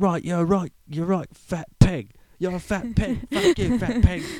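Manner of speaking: mock shrill, furious yelling, high and loud. Imagining a chef yelling at them, doing a mock-yelling Gordon Ramsay impression. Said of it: "He'd be pissed off and yelling at us".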